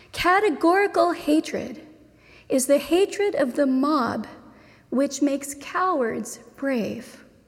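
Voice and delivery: read slowly with long pauses. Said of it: "I'm gonna read it slowly".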